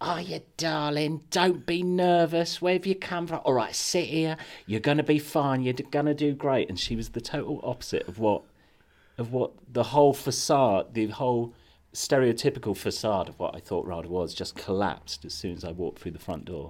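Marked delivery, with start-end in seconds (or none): 0.0-6.7 put-on proper East End accent, very high pitched. Retelling a receptionist's welcome at an audition: imitating an East End receptionist. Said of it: "proper East End".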